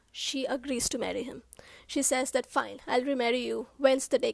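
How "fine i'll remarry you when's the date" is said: usual speaking voice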